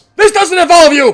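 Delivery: very loud, high-pitched shout. Voicing a character's line during a fight between two girls: shouting. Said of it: "I'm just shouting this".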